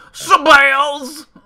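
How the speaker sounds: put-on very high, loud yelping voice. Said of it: "in Bill Cosby's voice".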